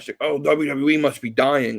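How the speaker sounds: slow, drawling, mocking sarcastic tone. Imitating people mocking a sixty percent viewer drop: imitating sarcastic people. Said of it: "I know they're being sarcastic".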